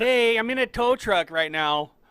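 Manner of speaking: put-on slight Canadian accent, very high and loud. Retelling a man's call from a tow truck: almost Canadian accent. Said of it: "almost said that in a Canadian accent".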